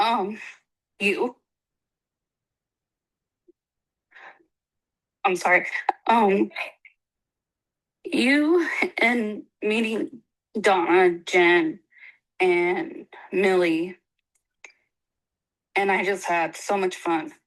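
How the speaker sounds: trying not to cry, choking up. Answering why they're glad they went, trying not to cry. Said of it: "I'm trying not to cry".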